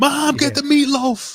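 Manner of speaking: very high, loud, slow, belted and drawn out. Doing a Will Ferrell impression for the other host: Will Ferrell impression. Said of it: "I'm doing the Will Ferrell".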